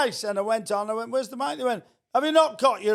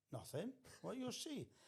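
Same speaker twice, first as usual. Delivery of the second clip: near-whispered, hushed put-on Welsh lilt; 27 dB quieter than usual. Retelling what he answered when asked about the missing stage, in a put-on welsh accent. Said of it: "I always go into a Welsh accent".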